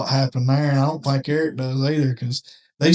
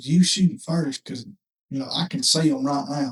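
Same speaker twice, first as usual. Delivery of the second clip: put-on whisper. Retelling what a friend said close by during a turkey hunt: imitating Eric whispering. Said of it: "he whispers to me".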